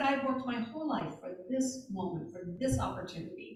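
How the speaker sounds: ordinary talk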